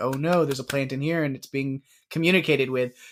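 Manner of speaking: usual speaking voice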